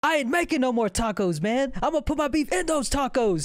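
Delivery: pissed-off, pumped-up rant. Retelling a movie scene, imitating Anthony Mackie pissed off. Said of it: "all pissed off".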